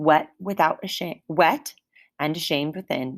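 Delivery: ordinary delivery, nothing marked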